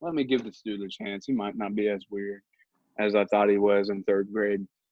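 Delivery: ordinary talk, nothing marked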